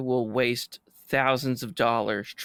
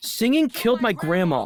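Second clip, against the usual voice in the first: grave, dramatic, dead serious, very high, raised voice; 10 semitones higher, 5 dB louder than usual. Quoting a character's line from a movie argument: most serious tone. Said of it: "in the most serious s-, tone, he says".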